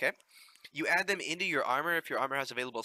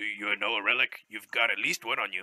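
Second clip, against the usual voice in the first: pirate voice, much lower; 5 semitones lower than usual. A game character telling the player about relics: pirate voice. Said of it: "He sounds like a pirate too".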